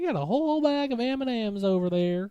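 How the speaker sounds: put-on hillbilly accent, high and drawn out. Imitating the listener's reply in a new voice, a hillbilly voice. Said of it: "I'm not sure if I like the hillbilly".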